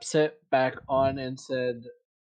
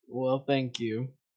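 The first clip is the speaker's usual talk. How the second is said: begrudging, reluctant, much quieter; 5 dB quieter than usual. Voicing a character in a tabletop game, answering another character's compliment, begrudging thanks. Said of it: "begrudgingly acknowledging it as a compliment".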